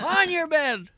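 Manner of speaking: acted yell in a whisper. Retelling shouting at the dog to shut up: imitating own whisper-yell. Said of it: "whisper yelling right now".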